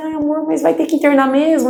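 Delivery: tearful, crying, pleading voice. Retelling what she said when her husband was admitted: retelling her own crying words. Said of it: "eu lembro que eu comecei a chorar".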